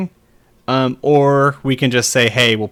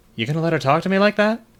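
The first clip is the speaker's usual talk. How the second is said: mock hopeless, already-beaten, resigned, high voice; 5 semitones higher than usual. Retelling what a man said as he turns and looks, mimicking a resigned tone. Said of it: "you can hear in his voice he knows this isn't gonna work".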